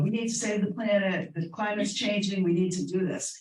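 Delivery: ordinary talk, nothing marked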